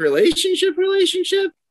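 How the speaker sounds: pitch jumping way up on "relationship".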